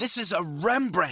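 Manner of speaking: harsh hissed whisper. Retelling his wife stopping their child from touching a painting, harsh hissed whisper. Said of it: "she hissed under the guard's glare".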